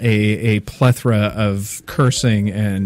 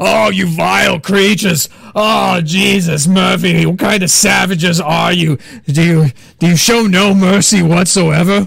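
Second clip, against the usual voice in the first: very high, loud, put-on screaming; 9 semitones higher, 5 dB louder than usual. Voicing a prisoner behind bars at the party: screaming in character. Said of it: "is now screaming".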